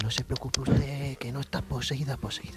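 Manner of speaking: soothing ASMR-style whisper. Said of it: "por qué estábamos hablando bajito".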